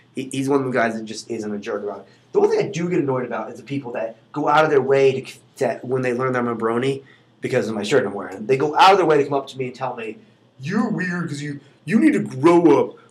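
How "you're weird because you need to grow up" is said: put-on obnoxious, annoying voice. Retelling what people say to him about being a brony, imitating an annoying person. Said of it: "Apparently this is like my annoying person voice".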